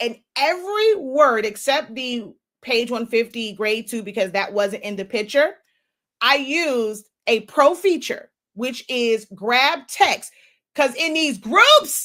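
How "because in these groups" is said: all-out loud, heated yelling. Ranting about advice given in these groups: yelling. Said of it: "I'm sorry for yelling".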